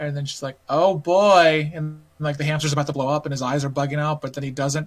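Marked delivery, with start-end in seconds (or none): 0.7-1.7 slow, loud, drawn-out slow-talking delivery. Retelling a game scene where a girl microwaves a hamster: imitating a game character's slow speech. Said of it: "'Cause she talks really slow like that".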